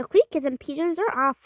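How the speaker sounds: plain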